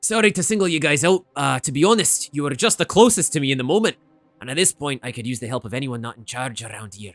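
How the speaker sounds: broad, thick Scottish brogue, laid on heavy. Narrating the game, the speaker voices Wilfred the penguin engineer: Wilfred's thick Scottish accent. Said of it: "with a very thick Scottish accent".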